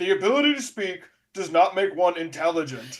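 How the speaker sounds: coolly delivered with zero emotion. Retelling a cold movie line with no emotion: deadpan Qui-Gon Jinn line. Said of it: "no emotion behind it".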